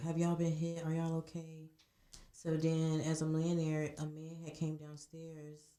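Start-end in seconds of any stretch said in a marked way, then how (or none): none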